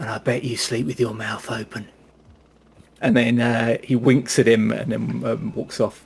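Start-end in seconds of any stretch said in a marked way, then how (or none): 0.0-1.9 hushed whisper. Narrating a scene, the speaker voices a character leaning down to a man, whispering. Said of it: "he leans down and whispers".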